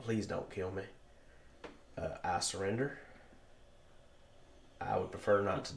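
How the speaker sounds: breathy, whispered, hushed pleading voice. The orc captain puts down his sword and kneels before the party: kneeling orc captain pleading. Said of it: "get down on his knees and go".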